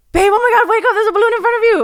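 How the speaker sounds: acted, very high, fast, freaked-out babble. Retelling how the partner woke the speaker about a balloon, imitating him freaked out. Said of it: "Why do you say it like that?".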